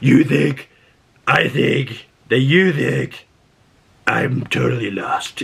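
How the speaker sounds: rough, creaky, raspy superhero voice. Retelling a comedy sketch's Batman line: Pete Holmes Bad Batman voice. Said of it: "Pete Holmes is so funny as Batman".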